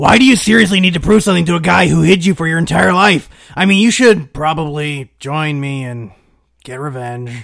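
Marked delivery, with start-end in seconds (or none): 3.5-7.3 hesitant, unsure, half-hearted tone. Urging an opponent to join them and get revenge: hesitant. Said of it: "Why do you sound so hesitant about that offer?".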